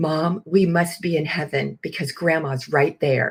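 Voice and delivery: blurted, put-on innocent, matter-of-fact childlike pronouncement. A mother retells what her daughter said at the casket: retelling a very loud remark. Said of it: "she says very loudly".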